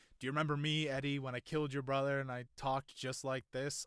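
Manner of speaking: normal talking voice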